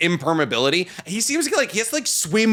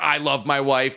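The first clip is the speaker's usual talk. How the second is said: put-on adoring husband voice, lower pitch; 4 semitones lower than usual. Imitating a small husband who admires his strong wife: imitating Serena Williams' husband.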